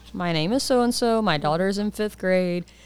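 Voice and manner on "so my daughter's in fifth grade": normal talking voice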